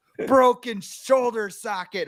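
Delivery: high, slow wail in a wrestler voice.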